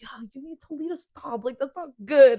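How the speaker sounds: put-on very loud, heated, high-pitched angry yelling. Retelling the boyfriend's complaint about cigarettes: imitating boyfriend getting mad. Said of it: "he gets mad at both of us".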